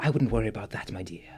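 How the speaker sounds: hissing-style snake creature voice. Voicing a figure speaking over a player's shoulder: Yuan-ti voice. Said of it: "a voice over your shoulder that just says".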